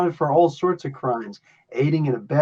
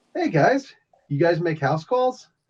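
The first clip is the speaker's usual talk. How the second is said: friendly, good-natured, neighborly voice; 3 semitones higher than usual. The game master voices someone calling from above the players, friendly neighborhood Spider-Man voice. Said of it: "a friendly neighborhood voice says".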